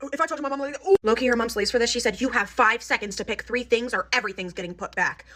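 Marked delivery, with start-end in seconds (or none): 2.2-5.2 harsh, mean, acted-out stern voice. Retelling a mom's ultimatum to her daughters at the register: imitating a mom speaking meanly.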